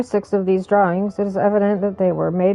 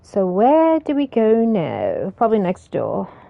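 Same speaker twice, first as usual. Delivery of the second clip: put-on English accent, sing-song and slow. Exploring rooms in a game and deciding where to go: english accent. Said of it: "talking like I have an English accent".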